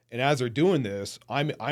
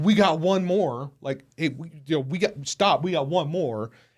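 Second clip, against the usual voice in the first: put-on, high-pitched, barked-out delivery; 5 semitones higher, 4 dB louder than usual. Retelling barking at the pilot to wait: retelling own barked order. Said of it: "I barked at him".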